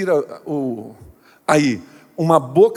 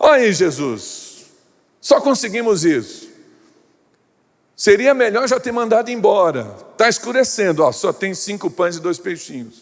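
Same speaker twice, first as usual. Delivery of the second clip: wry, ironic, sarcastic tone; 4 semitones higher than usual. A preacher acts out those bringing Jesus five loaves, in a mock-ironic tone. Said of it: "um tom irônico".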